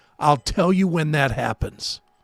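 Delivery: put-on dry, flat, expressionless deadpan. Retelling a band member's answer to an interview question, imitating a deadpan reply. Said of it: "his answer was deadpanned".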